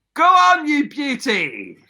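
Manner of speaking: high, swooping cheering shout. Looking up at the sky as he flies, shouting up at the sky. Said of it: "look up at the sky and shout".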